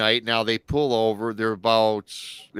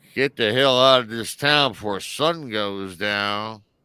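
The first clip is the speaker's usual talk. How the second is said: slow, overdone, exaggerated creepy voice. Retelling what a guy said to them, doing an exaggerated impression. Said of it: "I'm enhancing his voice".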